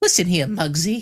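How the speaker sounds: very high-pitched, loud, belted cartoon voice. Two people recalling a favorite episode, quoting a line: high-pitched Cuphead voice. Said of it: "It's like very high pitched, like this right here".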